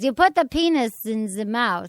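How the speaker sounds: put-on very slow, drawn-out German accent. Doing a quick impression of Doctor Ruth: Doctor Ruth impression. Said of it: "It's better than I could do her accent".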